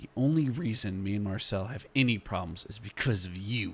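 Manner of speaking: low, quiet whisper. Voicing a character confronting a rival up close: low whisper. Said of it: "whisper as low as he can".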